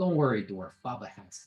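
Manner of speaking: small goblin character voice. Running a tabletop game, voicing a goblin to a dwarf, in the Chris accent. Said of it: "You're good at the Chris accent".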